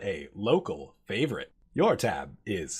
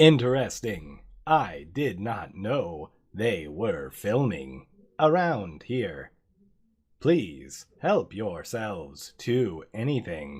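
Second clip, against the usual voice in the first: mechanical, robotic shop-clerk delivery. Voicing a robot cashier greeting a customer at the counter: robot cashier voice. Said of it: "the robot cashier looks at you and says".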